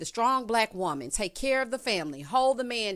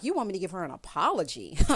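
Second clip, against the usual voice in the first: play-acted, appalled, aghast, disbelieving tone; 3 semitones lower than usual. Retelling a reaction to being asked for an apology: imitating someone appalled. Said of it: "Luann is appalled because she's like".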